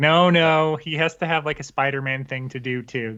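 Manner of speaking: normal talking voice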